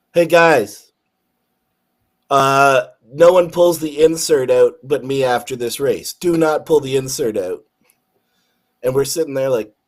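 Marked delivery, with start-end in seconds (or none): none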